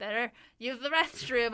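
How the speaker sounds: acted-out awkward, overly loud blurted delivery. Telling how they ended up at the wrong event, retelling their own awkward, loud line. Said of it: "I say very awkwardly, very loudly".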